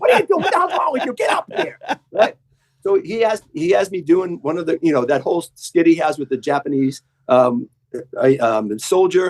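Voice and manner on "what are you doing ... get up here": very high, abusive heckling yell, put on. Retelling being yelled at on stage: imitating Rickles yelling. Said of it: "He's just abusing me as I'm walking".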